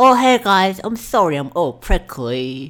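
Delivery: very loud, high cartoon pony voice. Auditioning on request, a speaker plays a character: Pony Pete voice. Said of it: "Pony Pete, the prickly pony".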